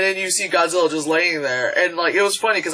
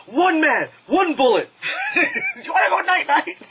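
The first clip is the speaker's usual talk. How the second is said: very high, animated delivery with big swoops; 12 semitones higher than usual. Retelling a movie line, imitating Kevin Hart. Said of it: "Like, from, uh, Kevin Hart. He's like".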